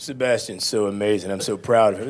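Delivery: ordinary delivery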